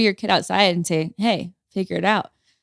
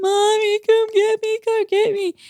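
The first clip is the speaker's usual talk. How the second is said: put-on very high, tearful, drawn-out little-kid crying. Retelling a child stuck on a hill calling for Mommy, imitating Stratton crying. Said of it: "ten minutes go by of screaming, crying".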